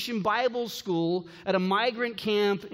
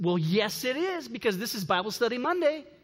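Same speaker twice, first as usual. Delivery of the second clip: sunny, beaming, quick cheerful delivery, acted; 3 semitones higher than usual. A parent retells her son's answer to a woman asking about a Bible, loud and smiling. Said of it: "with a loud voice and a smile".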